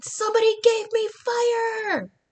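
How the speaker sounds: put-on child yelling, high-pitched and loud.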